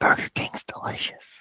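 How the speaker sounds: put-on whispering politician voice. Answering a friend about Burger King in a Joe Biden whisper. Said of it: "That's my Joe Biden whisper".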